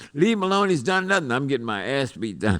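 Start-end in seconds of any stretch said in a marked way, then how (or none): 0.1-1.3 play-acted very high, loud hollering. Retelling a street arrest, imitating the crowd: retelling the crowd hollering. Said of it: "start hollering".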